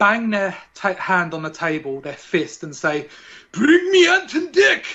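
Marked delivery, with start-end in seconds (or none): 3.5-4.9 very high-pitched put-on Scottish accent. Imagining what they should say after banging a fist on the table: put-on scottish accent. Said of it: "That was my Scottish accent".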